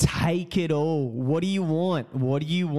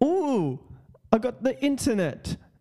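high put-on English accent, English-sounding on the ooh; 9 semitones higher than usual. Imagining someone in Africa running scams, imitating an English accent. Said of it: "I don't know why they sound English".

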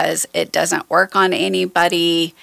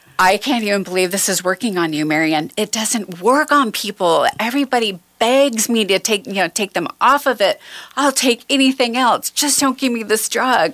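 mock overjoyed, excited, crying while talking; 4 semitones higher than usual. A patient quotes her doctor coming into the room; imitating excited crying doctor. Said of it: "my doctor came in the room jumping and crying".

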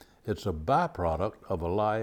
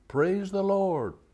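shouted out, hollered, very high pitch; 11 semitones higher than usual. Telling a story about an old lady shouting from her porch each morning: retelling a shout. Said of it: "she would shout".

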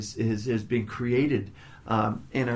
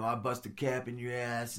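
put-on tough gangsta voice, much quieter; 9 dB quieter than usual. Retelling a guy recording himself with a gun, imitating him acting gangsta. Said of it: "he's acting all gangsta".

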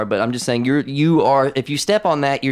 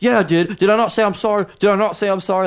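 mock-aggressive put-on voice, much higher; 7 semitones higher than usual. Retelling Bryce being asked if he apologized, imitating Bryce's aggressive retort. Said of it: "all aggressively".

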